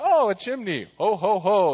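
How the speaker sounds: slow, tiny little squirrel critter voice. Telling a story, voicing the squirrel on the roof in a little squirrel voice. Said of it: "in a little squirrel voice".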